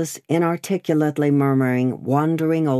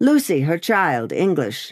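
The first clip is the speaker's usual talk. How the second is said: plain reading voice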